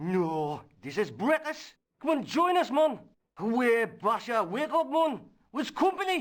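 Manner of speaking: put-on authentic-sounding Welsh accent. Reading a character's reply to a newcomer at breakfast, in a welsh accent. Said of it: "the most authentic Welsh accent".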